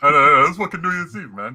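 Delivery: put-on New York accent. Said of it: "That was a New York accent".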